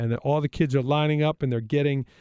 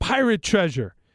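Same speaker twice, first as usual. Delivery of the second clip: put-on yelling, high and light; 5 semitones higher than usual. Retelling how a father quickly reframed a gift: imitating someone yelling. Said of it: "Dave yelled out".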